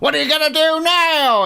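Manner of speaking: drunk-sounding woman's voice, high, loud, mock taunting.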